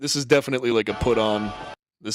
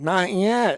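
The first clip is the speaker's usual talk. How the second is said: very high, fake little-kid voice; 10 semitones higher than usual. Quoting the line the kid says, imitating the kid's put-on voice. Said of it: "I just like the way he says".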